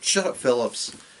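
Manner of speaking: ordinary talk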